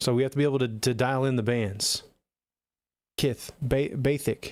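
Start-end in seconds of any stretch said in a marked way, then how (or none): 3.2-4.5 put-on boxer's lisp, spoken slower. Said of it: "Mike Tyson said Baythic".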